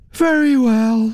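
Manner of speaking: spoken through a yawn. Naomi answers the Duchess, yawning. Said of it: "Naomi yawned".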